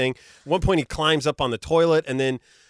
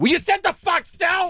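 mock very high, sudden, shrill yell; 14 semitones higher than usual. A dad recounting what he yelled at his son: retelling a yell. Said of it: "I'm sorry that I yelled at you".

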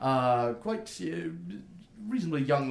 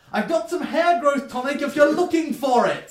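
very high, very loud, shrill voice; 12 semitones higher, 9 dB louder than usual. A woman leans right into his ear at the counter, speaking very loudly. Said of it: "leans like pretty much right in your ear and says very loudly".

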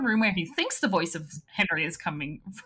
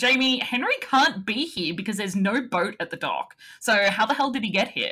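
usual speaking voice

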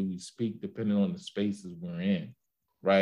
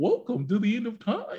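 put-on goofy tone, pitched higher; 13 semitones higher than usual. Retelling a character's welcome line from one scene, imitating a goofy tone. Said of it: "And he was goofy".

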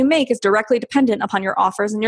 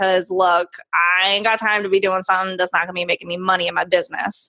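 brash, sassy, attitude-filled tone; 3 semitones lower than usual. Speaker talks sponsorships with another speaker, with such attitude. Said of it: "I said that with such attitude".

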